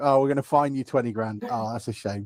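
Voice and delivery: ordinary talk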